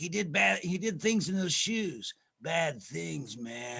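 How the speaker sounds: slow, drawling, strange-sounding odd voice. Retelling the commercial again, imitating Dennis Hopper as a weird character. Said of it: "It was a really weird character".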